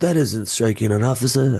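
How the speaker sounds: put-on whispered actor voice. Retelling a scene with Busey, the speaker imitates Steven Seagal's whisper. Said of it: "He whispers like everything".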